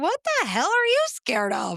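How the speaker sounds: high-pitched, loud, incredulous delivery.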